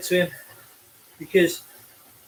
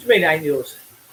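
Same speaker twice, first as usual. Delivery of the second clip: usual speaking voice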